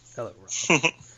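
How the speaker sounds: scornful, sneering tone. Imagining a co-host greeting Rob: imitating Brian sneering. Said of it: "Brian will probably just sneer at you".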